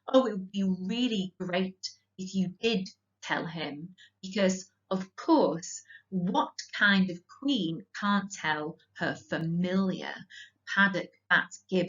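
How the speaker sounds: ordinary talk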